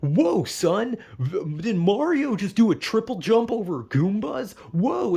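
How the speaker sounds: over-the-top wacky commercial dad voice, high, drawn out. Retelling an old mario game commercial: imitating a wacky commercial dad. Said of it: "the dad would just be like".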